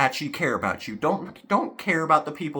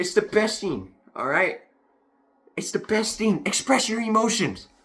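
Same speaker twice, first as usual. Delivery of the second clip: worked-up, heated, emphatic, pitched-up delivery; 6 semitones higher than usual. Urging viewers to express their emotions, getting heated. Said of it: "I was getting a little heated about that one".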